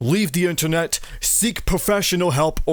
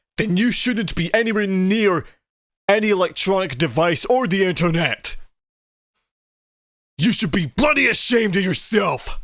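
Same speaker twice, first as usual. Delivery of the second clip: angry scolding tone in a raised voice; 2 semitones higher than usual. Scolding someone who stole art from a creator: raised angry tone. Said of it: "My sincere apologies for raising my tone".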